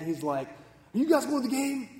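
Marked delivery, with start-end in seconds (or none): 0.5-1.9 mock furious man voice, pitched up. Retelling a man who came out before a baseball game, imitating a furious man. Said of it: "he's just all furious and mad".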